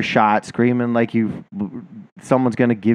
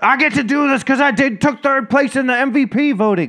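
mock very high, gloating, boastful shriek. Mocking a player who screamed after breaking a nose: imitating A'ja Wilson screaming. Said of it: "fucking screamed like it was like".

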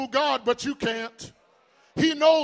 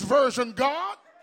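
ordinary talk

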